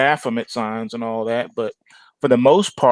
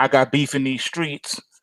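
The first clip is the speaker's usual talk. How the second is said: usual speaking voice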